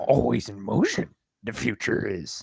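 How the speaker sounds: weak, soft, slow, drawn-out character voice. Quoting a line about the future in a weak Yoda impression. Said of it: "that is my weakest Yoda impression".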